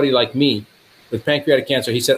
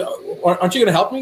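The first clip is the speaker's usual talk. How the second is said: put-on crying, tearful, pitched-up pleading voice; 5 semitones higher than usual. Retelling what a crying patient asked in the clinic, imitating someone crying. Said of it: "And he's crying".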